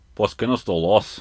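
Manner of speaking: put-on Scottish accent speaking Spanish. Asked to repeat an ad's line, Spanish in a Scottish accent. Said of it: "in your Scottish accent".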